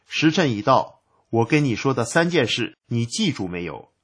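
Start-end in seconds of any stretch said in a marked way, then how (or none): none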